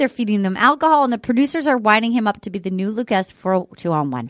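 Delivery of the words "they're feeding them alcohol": ordinary talk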